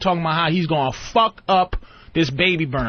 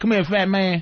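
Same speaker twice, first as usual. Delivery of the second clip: country-style way of talking; 2 semitones higher than usual. Retelling how prison inmates called out, imitating country inmates. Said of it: "they were like country".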